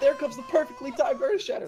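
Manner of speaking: high, loud, hyped caster voice.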